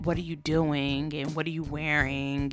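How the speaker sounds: put-on creepy man's voice. Retelling what a date texted or said: imitating a creepy guy. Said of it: "he was super, like, creepy".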